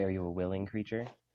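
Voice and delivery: plain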